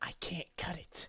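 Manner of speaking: very quiet, breathy whisper under the breath. Speaker acts out a man's words: retelling a whisper. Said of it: "He whispers".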